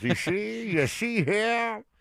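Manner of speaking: put-on old-time announcer, side of mouth. Showing others how he talks, speaking out of one side of the mouth. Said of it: "he talks out of one side of his mouth".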